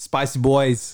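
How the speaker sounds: put-on Boston accent. Asked to end the episode, signing off in a boston accent. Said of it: "let you end with your Boston accent".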